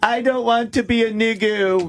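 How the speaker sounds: put-on high, slow little girl voice with a lisp. Retelling what Shyla said as a kid, in Shyla's little girl voice. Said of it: "in a little girl voice".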